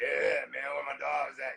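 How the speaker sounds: rough, worn-out, ragged, croaky rasp. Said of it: "his voice is like".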